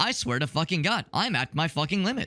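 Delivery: cheerful text-to-speech voice. Showing how the narration in TikTok videos sounds, happy TikTok voice. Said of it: "happy TikTok voice saying something like".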